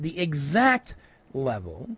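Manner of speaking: stress on "exact level", slowed right down. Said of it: "I'm gonna repeat".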